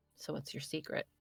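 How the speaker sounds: whispering in character. Voicing a character who leans in to ask a secret: whispering in character. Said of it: "lean in and whisper to her in Infernal".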